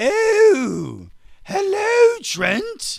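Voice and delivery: very high, loud sing-song, stretched swooping "oh". Showing the voice heard when seeing the Mona Lisa, greeting Trent: Mona Lisa voice. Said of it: "That's the voice I hear in my head when I see the Mona Lisa".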